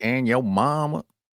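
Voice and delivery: put-on southern US twang. Speaker imitates an actor's sudden accent switch in a movie: imitating a southern twang. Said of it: "He does like the southern twang".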